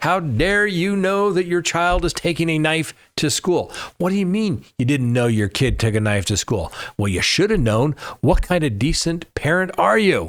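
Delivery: high, put-on indignant outrage, dripping sarcasm. Questioning why a stabbing suspect's parents were not charged: put-on sarcastic outrage. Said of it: "a little bit of sarcasm there".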